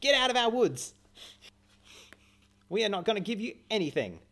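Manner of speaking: shrill, very high, loud forest-pixie cry. Voicing a character telling intruders to leave the woods: pixie from Fern Gully voice. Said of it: "I imagine her like the pixie from Fern Gully".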